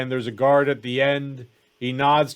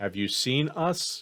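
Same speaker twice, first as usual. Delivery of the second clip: slow, hushed whisper, very close to the ear; 6 dB quieter than usual. Voicing Eldred answering a player privately in their ear: whispering. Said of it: "Eldred whispers in your ear".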